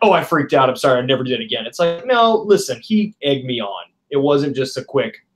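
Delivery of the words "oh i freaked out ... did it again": usual speaking voice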